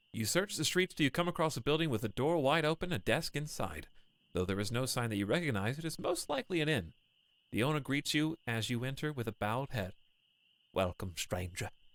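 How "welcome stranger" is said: deep, soft, rumbling voice. Narrator voicing an inn owner greeting a stranger who enters, deep rumbly voice. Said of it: "deep and rumbly voice".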